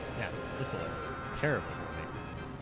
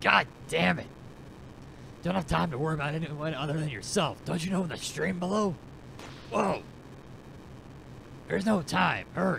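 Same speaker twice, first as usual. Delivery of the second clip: raspy put-on voice, much higher and faster; 6 semitones higher than usual. Speaker voices a game character's dialogue, raspier put-on voice. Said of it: "I'm getting, like, raspier in an attempt to make them sound different".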